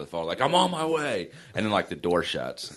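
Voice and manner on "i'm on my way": mock very high, screaming yell. Retelling calling home and mom's answer: imitating mom screaming. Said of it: "you'd hear my mom scream across the house".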